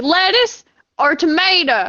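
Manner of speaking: high, cartoonish country-folk voice. Imitating the country people from SpongeBob: SpongeBob country people voice. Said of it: "You sound like those country people from, uh, SpongeBob".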